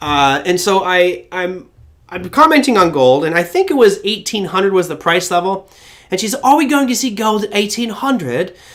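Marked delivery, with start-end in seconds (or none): 6.3-8.5 put-on Australian accent, higher pitched. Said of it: "with her lovely Australian accent".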